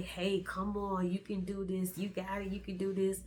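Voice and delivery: ordinary talk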